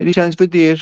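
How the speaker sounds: put-on Kerry accent. Retelling a man asking a woman for a date, in a strong Kerry accent. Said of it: "real strong Kerry accent".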